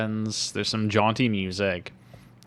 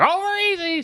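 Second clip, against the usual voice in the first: loud shouting; 4 dB louder than usual. Retelling how she yells a phrase to herself, yelling. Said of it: "She yells it".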